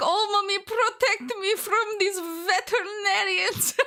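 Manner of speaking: vague put-on Eastern European accent. Worried about slipping into the bit in front of the vet: put-on Eastern European accent. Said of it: "a vaguely Eastern European accent of some description when I'm doing her voice".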